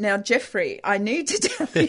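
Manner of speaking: slow, very stern, no-nonsense delivery. Imitating Carmel stopping someone racing off: Carmel's stern voice. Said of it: "The very stern voice would come".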